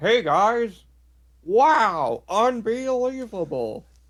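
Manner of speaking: very high, very slow, drawn-out hyped announcer voice. Imitating how Vince talks on the show, Vince's announcer voice. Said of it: "Vince doing his announcer voice is crazy. He's like".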